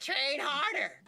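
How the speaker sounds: put-on raspy coach voice. Quoting a fitness coach: Greg Doucette impression. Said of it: "that sounds like Greg Doucette".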